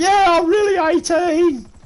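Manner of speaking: put-on very high, loud, squeaky, voice-breaking teen voice. Imitating a boy with a fake id at a nightclub, imitating a kid's squeaky broken voice. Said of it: "with his squeaky broken voice is going".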